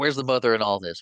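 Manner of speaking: put-on hollering voice. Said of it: "she hollers and calls them little monsters".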